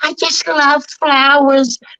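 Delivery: high-pitched cartoon character voice. Doing a quick impression of a cartoon character: Smurfette voice.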